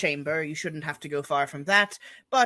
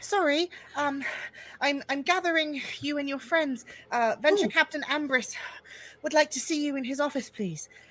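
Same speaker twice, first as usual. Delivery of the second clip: very high-pitched, slightly winded, out of breath; 10 semitones higher than usual. Voicing a messenger who ran up to the party: a little out of breath. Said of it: "a little bit out of breath".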